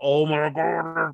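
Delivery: acted-out, thrilled little excited burst of joy. Speaker recalling seeing confetti on the screen, retelling an excited yell. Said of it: "Like I'm yelling".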